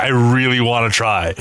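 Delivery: normal talking voice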